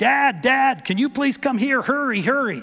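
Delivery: mock child voice yelling, high and loud. Retelling sons charging through the front door calling for help: imitating boys yelling. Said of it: "they were yelling".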